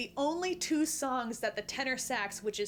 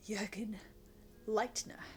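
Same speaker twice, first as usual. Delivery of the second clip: whispered, breathy, acted put-on voice; 2 semitones lower, 7 dB quieter than usual. Opening a rant performed for watchers, put-on character voice. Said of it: "this is [name] doing the Jurgen Leitner rant".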